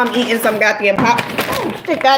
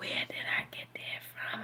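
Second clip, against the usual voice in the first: breathy, hushed, very soft whisper. Retelling a video of a lady reading comments: imitating someone whispering. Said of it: "like whispering".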